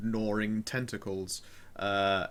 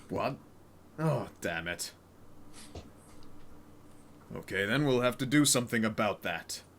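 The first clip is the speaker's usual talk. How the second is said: big, larger-than-life hero-style character delivery. In a role-play scene, a character hiding with others, booming voice. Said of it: "I like how he speaks in his booming voice".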